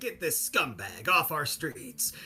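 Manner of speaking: swooping, pitch-swinging crime-show host delivery. Imitating a TV show host calling someone a scumbag: imitating John Walsh. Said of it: "he talked like this".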